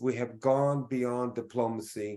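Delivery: ordinary talk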